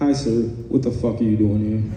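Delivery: low, hostile voice with fake politeness.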